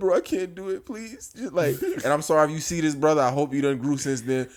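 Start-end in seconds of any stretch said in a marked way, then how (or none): 0.0-1.3 mock high, sobbing, crying, babyish pleading tone. Retelling basic training, when Cullen begged, imitating Cullen crying. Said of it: "started crying like a baby".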